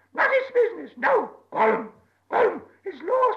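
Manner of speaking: shrill creature shriek swooping wildly up and down. Gollum answers Bilbo asking what he has lost; Gollum shrieking. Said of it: "shrieked Gollum".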